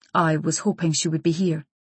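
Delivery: plain reading voice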